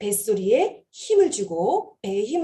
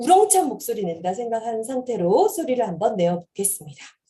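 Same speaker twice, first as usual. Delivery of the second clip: usual speaking voice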